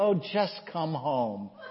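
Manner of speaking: soft, resigned, giving-up, surrendering tone. Speaker retells their mom's reply, imitating a resigned voice. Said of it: "in a resigned voice said".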